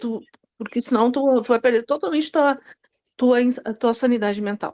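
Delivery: ordinary talk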